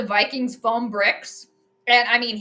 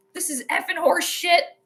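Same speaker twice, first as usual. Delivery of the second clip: put-on annoyed old man voice, outburst; 6 semitones higher than usual. Remembering watching games with his grandpa, imitating an annoyed grandpa. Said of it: "he'd get so annoyed".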